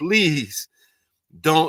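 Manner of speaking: mock tearful crying, tears coming. Retelling pleading with aching feet while crying: imitating own crying plea.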